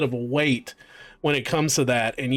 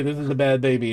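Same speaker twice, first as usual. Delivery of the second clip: ordinary delivery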